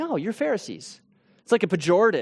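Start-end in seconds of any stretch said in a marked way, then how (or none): 0.0-1.0 pleasant, soft, friendly, gentle, nice-mannered tone. Contrasting the way he did not say it; nice, friendly way. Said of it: "He doesn't say it in a nice way".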